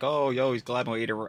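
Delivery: ordinary talk, nothing marked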